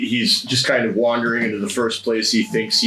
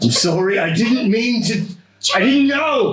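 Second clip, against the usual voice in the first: very high, rising, hollered yell; 11 semitones higher than usual. His character collapses before a vision and yells an apology at the bush. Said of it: "just starts yelling, "I'm sorry"".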